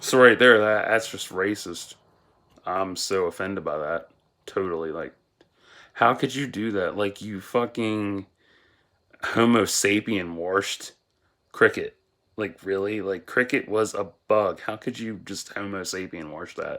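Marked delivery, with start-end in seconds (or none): none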